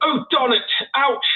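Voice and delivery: shrill, very high-pitched, loud British accent. Speaker shows what comes out after stubbing a toe: british accent. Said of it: "I'll like get a British accent".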